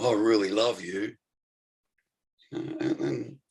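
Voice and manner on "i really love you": mock sarcasm, quieter. Acting out what people say in a relationship: put-on sarcastic tone. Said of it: "now I'm being sarcastic".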